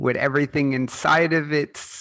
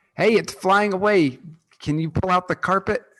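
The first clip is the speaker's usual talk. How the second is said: high, loud, shouted call-out; 5 semitones higher than usual. Calling to another character that the thing is flying away: shouting to another character. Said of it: "I'm gonna shout to Morgan".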